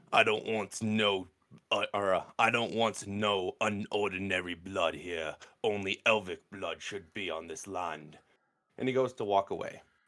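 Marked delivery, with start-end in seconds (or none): 0.1-8.1 hushed, mumbled grumble, muttered under the breath. A character turns to walk away, muttering under his breath. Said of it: "you hear him kind of mutter".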